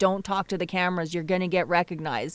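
ordinary talk, nothing marked

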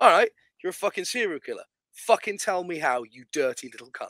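blunt, flat, totally unbothered tone. Imitating an interviewer unfazed by a serial killer: imitating Howard Stern. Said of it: "Howard Stern is like".

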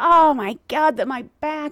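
high, aching, stretched-out, drawn-out pained grumble. Retelling a man in an elevator complaining to his friends: imitating a man with back pain. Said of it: "He's holding his back".

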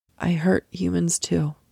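faintest breath of a hush, slow stage whisper. Velia answers the question put to her with the faintest breath, half-whispered. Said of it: "With the faintest breath, Velia whispered".

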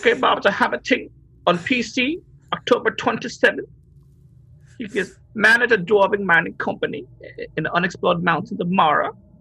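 put-on Guyanese-accented speech. Reading a game listing as the speaker's boss would: imitating boss's Guyanese accent. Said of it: "That's a Guyanese accent for you".

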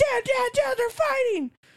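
put-on acted high child's scream. A dad retells his son watching fights in sports, imitating Jackson screaming excitedly. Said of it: "he will like freak out and scream".

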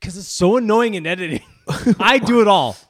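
loud, high-pitched yelling. Speaker complains to a co-host about editing, yelling. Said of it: "But you don't have to yell at me".

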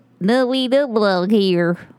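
geeky, nerdy put-on Texan accent. Speaker imagines answering resort pool guests, nerdy Texan accent. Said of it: "was that like nerdy Texan accent?".

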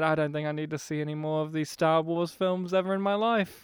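usual speaking voice

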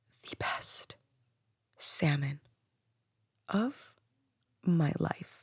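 slow, halting, dramatic emphasis with each word drawn out. Describing the best salmon of their life, slow for dramatic effect. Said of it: "I say that slow to emphasize the dramatic effect".

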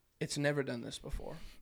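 mock dead-serious tone. Retelling what a man told them when it would not start, retelling a dead-serious reply. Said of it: "looks at me dead ass serious and goes".

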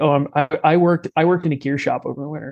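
plain

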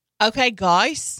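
put-on Aussie-style Australian accent. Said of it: "That was Australian, wasn't it?".

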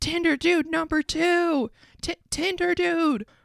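mock loud, high-pitched holler. Retelling seeing a tinder date at 3 a.m., imitating a friend's yelling. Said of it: "my friend starts yelling".

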